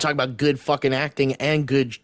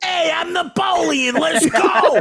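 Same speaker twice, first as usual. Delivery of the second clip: put-on thick New York accent, higher and louder; 4 dB louder than usual. Mocking an actor's Napoleon role with no French accent: Joaquin Phoenix impression. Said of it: "doing Joaquin Phoenix".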